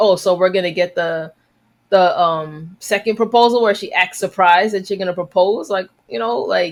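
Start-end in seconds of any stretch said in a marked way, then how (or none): none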